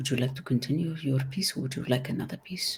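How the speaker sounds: very quiet, soft, gentle voice. Retelling the teacher crouching next to Dina and asking her, very quiet. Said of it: "he says it very quietly".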